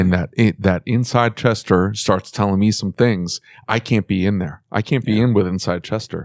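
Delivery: ordinary talk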